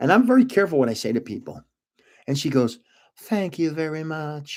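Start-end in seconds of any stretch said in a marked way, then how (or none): 3.2-4.6 put-on soft, murmured Southern accent. Retelling complimenting Marla's earrings, imitating her reply in a Southern accent. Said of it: "with that Southern accent".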